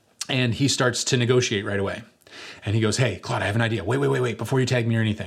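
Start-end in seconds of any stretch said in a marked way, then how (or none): 3.0-5.3 imitated whisper. Retelling how the cornered team leader began to negotiate: imitating someone whispering. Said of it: "he's kinda whispering".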